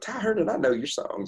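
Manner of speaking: high-pitched put-on Oklahoma accent. Quoting what a woman said on meeting the speaker backstage, in an Oklahoma accent. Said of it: "that Oklahoma accent came out".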